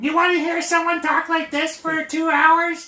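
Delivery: shrill, very high, squealing, very loud cartoon voice. Showing how the villain talks in the old cartoon: Skeletor cartoon voice. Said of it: "That's Skeletor".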